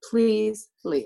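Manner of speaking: acted desperate, pleading tone. Retelling begging someone in the room to leave: retelling a desperate plea. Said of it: "begging her to leave me alone".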